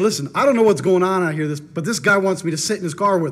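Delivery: ordinary delivery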